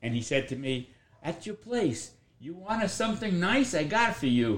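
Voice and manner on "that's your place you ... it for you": put-on Italian-flavoured English, Italian accent, pitched up. Retelling what his friend Aldo said to him, imitating Aldo's Italian accent. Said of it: "What accent is that? Is that Italian?".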